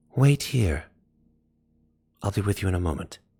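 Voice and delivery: gentle, murmured, very soft, hushed voice. Narrator voicing an unseen figure calling from the hallway; very soft voice. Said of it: "a very soft voice".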